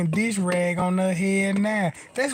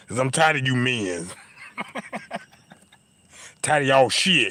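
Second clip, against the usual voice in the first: very deep, low, aggressive tough-guy trucker voice; 7 semitones lower than usual. Acting out a woman answering why she is so aggressive: aggressive truck-driver voice. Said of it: "Why you so aggressive?".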